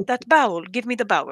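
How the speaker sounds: put-on accented speech with a Jordanian accent. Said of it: "somebody with a strong accent".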